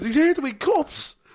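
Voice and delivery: acted, very high, loud, heated outburst. Retelling a heated pundit argument about Ronaldo: imitating heated Jamie Carragher. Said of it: "And they're getting really heated".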